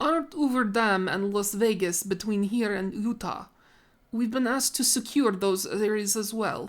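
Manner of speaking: put-on speaking with Russian accent. Narrator voices the character Klopov speaking to Garrett, in Klopov's Russian accent. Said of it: "wait until you hear my Russian accent".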